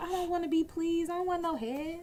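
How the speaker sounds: high, soft damsel in distress voice. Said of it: "in that damsel in distress voice".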